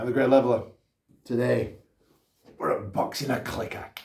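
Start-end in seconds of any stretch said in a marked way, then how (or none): 2.6-3.9 poorly done, croaking monster voice impression. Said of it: "That was a terrible clicker impression".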